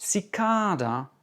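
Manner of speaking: cicada with second syllable -ca- emphasized. Listing English words by stressed syllable: stress on second syllable of cicada. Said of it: "accent sur la deuxième".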